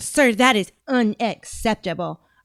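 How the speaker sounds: patronizing, overly simple explaining tone. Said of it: "I'm trying to get her cadence down".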